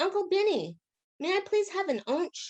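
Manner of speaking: put-on squeaky, very high small-kid voice. Retelling what the little boy Matthew said to the narrator's dad: Matthew's little boy voice. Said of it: "in a little boy accent".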